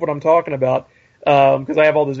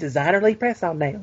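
put-on young boy's voice, about eleven years old; 6 dB quieter than usual. Retelling what an eleven-year-old kid said: imitating his voice. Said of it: "That's what he sounded like".

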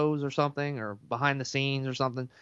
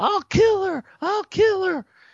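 mock shrieking, very high-pitched and loud screaming; 6 dB louder than usual. Describing a film scene, retelling a passerby's screaming. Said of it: "somebody's walking by screaming".

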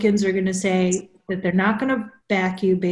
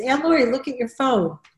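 put-on pitched-up young child voice; 5 semitones higher than usual. Retelling how the nephew tries to unlock her phone: imitating her nephew. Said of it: "he'll go like this".

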